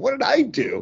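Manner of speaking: very high, squeaky, startled squeak.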